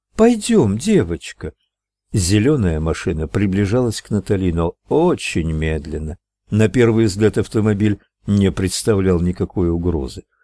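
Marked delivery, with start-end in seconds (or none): 0.2-1.5 impatient, pitched-up, hurrying tone. Reading Natalie calling Rosalie, who is still sitting on the sidewalk: impatient. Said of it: "Натали нетерпеливо обернулась к ней".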